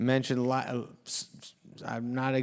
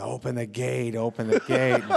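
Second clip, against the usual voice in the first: plain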